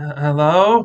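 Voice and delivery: tepid, hesitant, timid voice. Voicing an unseen figure behind a door: tepid, hesitant voice. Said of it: "a very tepid voice ask".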